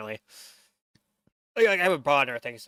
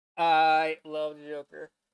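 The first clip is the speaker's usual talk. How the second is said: very slow, drawn-out gushing.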